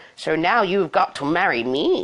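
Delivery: ordinary delivery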